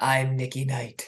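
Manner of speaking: polished, smooth on-air radio announcer voice. Retelling the husband walking in and suggesting a name, in a radio voice. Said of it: "just using my radio voice says".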